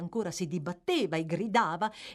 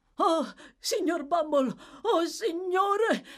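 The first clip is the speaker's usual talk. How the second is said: high-pitched exclamation; 7 semitones higher than usual. One character cries out to another who has just rushed into the yard, exclaiming. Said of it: "esclamò Noah".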